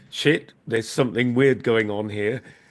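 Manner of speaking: ordinary talk, nothing marked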